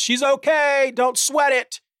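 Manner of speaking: called out high to a group.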